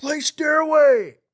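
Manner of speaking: very high, shrill and loud heckling shout. Retelling a comedy tent show: imitating a heckler in back. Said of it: "Some guys in the back".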